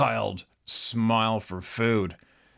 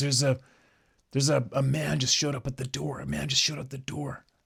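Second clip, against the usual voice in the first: mock whisper, higher; 4 semitones higher than usual. Retelling a phone call where the caller whispered about an intruder: imitating someone whispering. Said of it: "she's whispering like".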